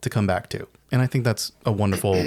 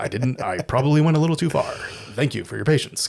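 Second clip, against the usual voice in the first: earnest, wholesome all-American hero voice; 4 semitones higher than usual. Describing the movie's hero when he speaks: all-American Clark Kent-y voice, imitating Toxie. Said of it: "So he talks like that".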